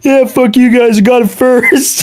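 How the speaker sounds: high, screaming taunting tone. Retelling a guy screaming at a line from a car window: imitating someone screaming. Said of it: "holding it out the window screaming".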